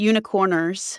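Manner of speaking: put-on American accent. Playing a noble knight seeking a missing princess: american accent. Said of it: "do this in an American accent?".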